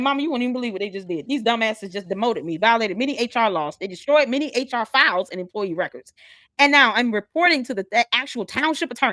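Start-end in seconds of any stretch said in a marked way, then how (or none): none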